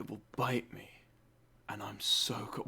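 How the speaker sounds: sultry, seductive, breathy whisper. Mocking a voice actor's delivery of a line: mock-sexy voice. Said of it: "Why sexy, voice actor?".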